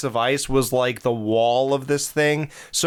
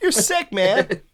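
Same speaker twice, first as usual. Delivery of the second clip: put-on high voice, higher; 8 semitones higher than usual. Repeating a movie line after another speaker: imitating Johnny's high voice. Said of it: "Johnny's voice went high for this movie".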